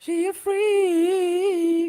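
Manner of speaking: high, slow falsetto. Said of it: "into your falsetto voice".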